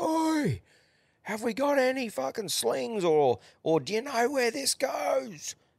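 very high shout, acted out. Retelling a workmate calling down from three levels up, imitating him yelling. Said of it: "our mate will yell down".

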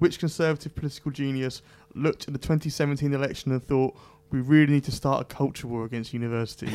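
normal talking voice

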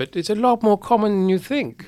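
put-on wise, knowing, high sage voice. Speaker explaining time twins to the others, in a put-on wise voice. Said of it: "I have to put on a wise voice to tell you this".

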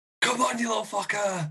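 menacing scream, pitched very high. A player's character screams into the night, an intimidating scream into the night. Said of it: "scream intimidatingly into the night".

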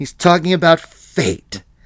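high mock teacher voice, fate stressed hard. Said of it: "hitting that word fate so hard".

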